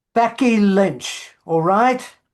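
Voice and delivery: very loud, high, badly put-on Irish accent. Bringing up Becky Lynch with the person being talked to, in a terrible Irish accent. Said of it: "that was a terrible Irish".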